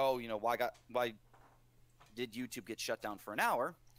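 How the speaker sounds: ordinary delivery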